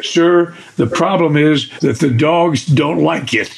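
ordinary talk, nothing marked

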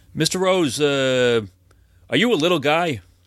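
high, slow, drawn-out, hesitant character voice. Retelling a phone call from the man who found the ring: imitating the caller's voice. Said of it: "turned into a complete character".

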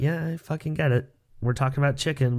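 normal talking voice

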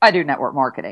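mock-embarrassed mumble under breath. Retelling answering people at parties who ask what they do; retelling a muttered, embarrassed answer. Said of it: "I'd almost like under my breath, sort of looking away".

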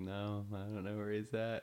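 ordinary delivery

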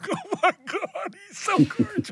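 very high, weepy, tearful, starstruck gushing. Retelling their own reaction after Brad praised their show: retelling crying. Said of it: "And I cried, going".

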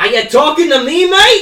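put-on Australian accent. Redoing 'are you talking to me' as a joke: put-on australian accent. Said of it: "It's me! An Australian!".

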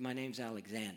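very quiet, barely audible, hushed voice. Retelling a young man's reply to Alexander the Great: imitating a hushed tone. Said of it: "Speak up, boy".

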